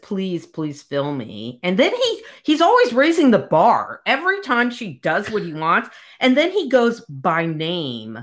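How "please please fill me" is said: imitated quiet voice, much lower and quieter. Retelling what she finally says to him, quietly. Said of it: "she's just as quiet and finally says".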